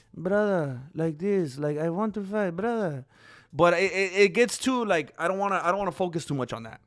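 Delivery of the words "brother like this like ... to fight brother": gentle, very soft, softly spoken serial-killer voice. Imitating a fighter's voice: soft serial killer Makhachev voice. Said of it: "has the softer serial killer voice".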